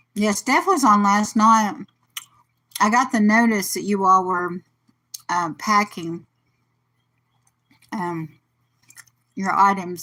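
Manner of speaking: chewing while speaking, mouth full. Speaker eating pound cake while chatting, talking while chewing. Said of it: "Sorry for the chewing".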